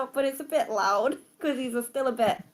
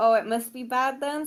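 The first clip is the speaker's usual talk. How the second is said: ordinary delivery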